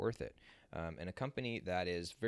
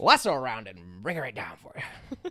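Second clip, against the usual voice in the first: put-on Mid-Atlantic movie accent, higher and louder; 4 semitones higher, 10 dB louder than usual. Giving a promised impression from the thumbnail: Jimmy Stewart impression. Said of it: "Jimmy Stewart impression".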